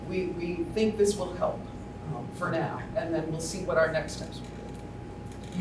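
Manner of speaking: ordinary talk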